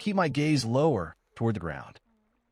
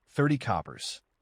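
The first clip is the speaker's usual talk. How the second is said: normal talking voice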